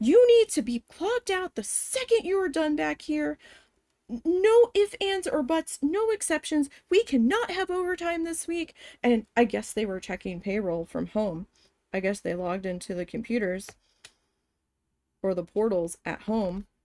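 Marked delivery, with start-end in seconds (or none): 0.0-8.7 high-pitched, angry screaming. Speaker retells what a woman yelled at them: imitating someone yelling. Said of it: "And she starts yelling at me".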